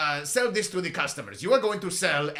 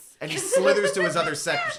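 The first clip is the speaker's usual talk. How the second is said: plain reading voice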